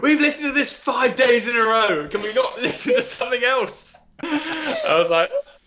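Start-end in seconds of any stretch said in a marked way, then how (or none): 0.0-4.0 very high, fed-up, exasperated shouting. Speaker recounts someone at dinner objecting to their record, retelling an exasperated shout. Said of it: "Kara just shouted at me going".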